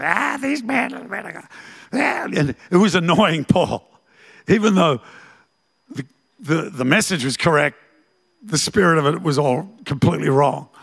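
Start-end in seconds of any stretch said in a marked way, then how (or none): 0.0-1.5 rasping, high, soft, creaky witch-like croak. Retelling how a fortune-telling girl proclaimed Paul and Silas: witch's voice. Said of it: "it was like a witch's voice".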